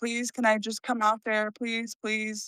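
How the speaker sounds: tearful begging while crying. Recalling crying on the phone to her after moving away: imitating own crying plea. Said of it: "I'd be crying like".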